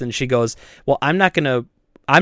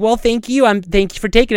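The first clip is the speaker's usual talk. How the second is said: put-on, high, superficially sweet, fake-nice polite tone; 6 semitones higher than usual. Retelling a customer's reply at a trade: imitating someone being fake nice. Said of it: "super fake nice".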